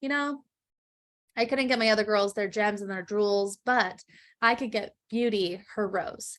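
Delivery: ordinary talk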